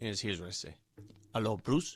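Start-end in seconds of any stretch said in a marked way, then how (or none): 1.3-2.0 terrible put-on accent veering Spanish-sounding. Imitating Nikola Jokic phoning a player: terrible Nikola Jokic impression. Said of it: "Terrible Jokic".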